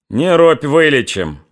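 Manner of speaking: sneering, scornful, mocking, derisive jeer. A stocky Cossack replies to the man spitting blood, rising from the table: mocking. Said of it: "насмешливо сказал приземистый казак".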